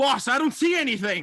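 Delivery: very high, very loud, far-off shout. Narrating a game, a character calls back through the gate: Jake shouting back from afar. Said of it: "you hear Jake shout back".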